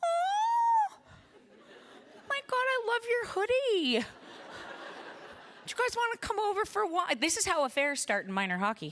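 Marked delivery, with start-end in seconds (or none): 0.0-7.1 very high, sing-song, swooping gushing. Describing how parents lean in at minor hockey, imitating a voice jumping octaves up. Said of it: "your voice goes up a couple octaves".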